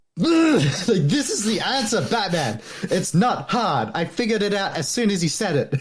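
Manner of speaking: mock slow, drawn-out scream. Retelling what was screamed at the screen during a movie: retelling screaming at the screen. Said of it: "I was screaming at my screen".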